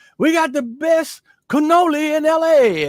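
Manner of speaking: very high, drawn-out hollering scream. Speaker imitates a man shouting out a window at passersby: imitating a man screaming. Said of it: "he's screaming out the window".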